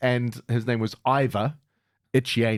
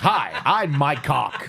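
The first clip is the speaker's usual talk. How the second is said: put-on American accent, higher pitch; 3 semitones higher, 3 dB louder than usual. Retelling how a Navy seal introduced himself: imitating an American accent. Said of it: "in an American accent".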